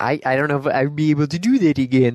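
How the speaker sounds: goofy cartoon moose voice. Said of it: "it's pretty close right there".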